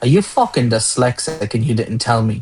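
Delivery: half-whispered stage voice. Retelling what a manager half-whispered into a headset during a call: imitating a manager half-whispering. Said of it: "he whispers and he goes".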